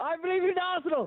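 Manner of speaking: shouting. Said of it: "shout at the top of your voice".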